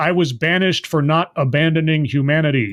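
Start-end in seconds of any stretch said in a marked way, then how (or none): none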